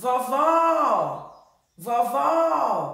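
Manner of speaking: vovó with a long, loud second syllable.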